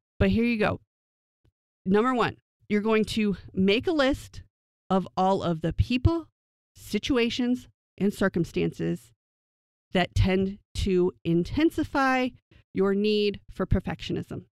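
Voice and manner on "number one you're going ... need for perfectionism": slow, measured, deliberate step-by-step delivery. Speaker listing self-evaluation steps for viewers to write down, slow, deliberate pace. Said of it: "I'm going to say it slowly".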